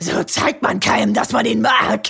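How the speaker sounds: rough, creaky, raspy demon voice. Retelling a film scene, the narrator voices Carly Beth in her demon voice. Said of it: "sagt Carly Beth mit ihrer Dämonenstimme".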